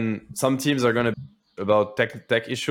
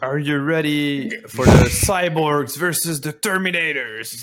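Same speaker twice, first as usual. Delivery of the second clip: mock wasted drunk voice, higher; 3 semitones higher, 3 dB louder than usual. Retelling what the drunk host said on stage: imitating the drunk stage host. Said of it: "He was like".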